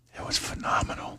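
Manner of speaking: whispering. Answering a question about the weekend during whisper talk: whispering. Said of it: "I knew I'd be coming into work today to just whisper".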